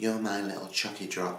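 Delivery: ordinary talk, nothing marked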